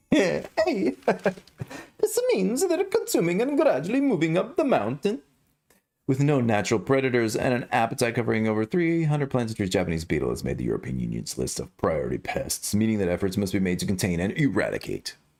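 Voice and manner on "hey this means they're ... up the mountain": put-on Italian accent, going way up in pitch. Doing a video narration in a character voice: Mario accent. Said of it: "so I got to do the Mario accent now".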